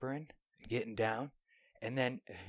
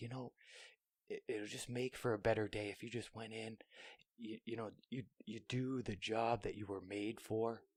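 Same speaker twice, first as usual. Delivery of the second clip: put-on whisper, quieter and slower; 9 dB quieter than usual. Retelling what the speaker whispered to the last piece, retelling a whisper. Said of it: "And I'm just whispering".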